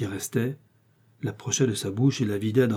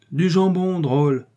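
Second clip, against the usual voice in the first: loud, high shout; 7 semitones higher, 6 dB louder than usual. Reading a novel aloud, Athos, drinking with d'Artagnan, calls out, shouting. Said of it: "cria Athos".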